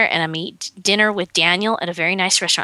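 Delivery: plain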